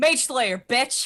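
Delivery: loud, high, excited yell. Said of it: "Sorry, I'm yelling".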